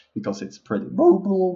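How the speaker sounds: cracking voice, pitch jumping up. Praising a tank's mobility, with a sudden voice jump. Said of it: "Sorry for that voice jump".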